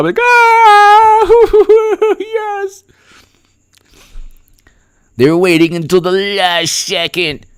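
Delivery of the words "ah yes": high, loud shriek, sobbing through happy tears. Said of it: "I'll be yelling like tears of joy".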